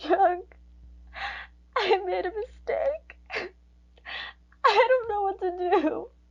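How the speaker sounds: in tears. Answering someone who asks why she is crying, crying. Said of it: "why are you crying?".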